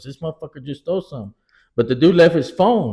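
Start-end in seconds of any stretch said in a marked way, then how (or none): 0.0-1.3 put-on angry outburst voice, quieter. Retelling a cashier's words after a theft, imitating a mad cashier. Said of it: "he was pretty mad that".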